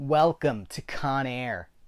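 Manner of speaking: very slow, deliberate actor voice, words dragged out. Reading a film box that lists John Malkovich, doing a John Malkovich impression. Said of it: "It's not a good Malkovich".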